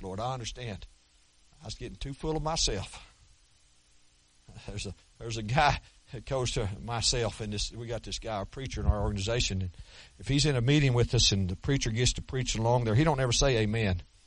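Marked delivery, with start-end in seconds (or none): 0.0-0.9 quiet, humble, submissive tone. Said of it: "Humble, I said".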